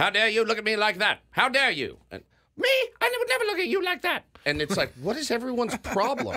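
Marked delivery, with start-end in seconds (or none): 0.0-4.2 put-on very high, old-timey 1920s film-star delivery. Discussing how people talked in 1920s film clips, old-timey 1920s movie voice. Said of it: "Seen movies from the, you know, they show clips in the 20s".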